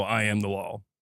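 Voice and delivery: low, stern lawman voice. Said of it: "he is going to let you know".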